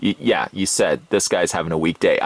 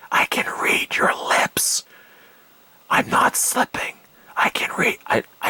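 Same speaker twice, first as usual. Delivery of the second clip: all-breath, breathy whisper. Talking to a listener who has a headset on, whispering. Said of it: "I'm whispering".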